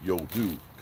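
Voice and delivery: voice dropped very low. Quoting what a Steelers fan said this weekend, Richard's deep voice. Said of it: "because he's got a real deep voice".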